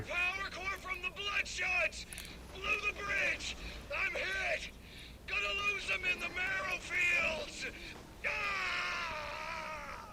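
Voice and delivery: very high, shrill, very loud shouting. Calling out that the bridge is blown and he is hit: shouting. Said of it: "There's no need to shout".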